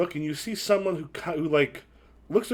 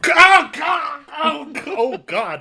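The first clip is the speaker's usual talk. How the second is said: acted panic, choking cries, higher and louder; 11 semitones higher, 9 dB louder than usual. Voicing a stranger being choked: panicked choking cries. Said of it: "you just hear".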